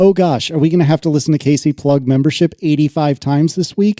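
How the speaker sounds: ordinary talk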